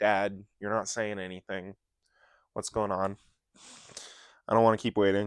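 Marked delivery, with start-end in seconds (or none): none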